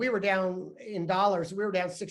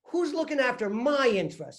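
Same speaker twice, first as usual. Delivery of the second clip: put-on New York accent, pitched up; 5 semitones higher than usual. Retelling what he asked the CFO during a meeting, put-on New York accent. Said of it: "I kind of put my New York accent on".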